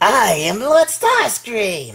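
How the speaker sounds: high, swooping, regal tone, drawn out and grand. Posing a toy figure with a cape, doing a horrible Starscream impersonation. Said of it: "my horrible Starscream impersonation".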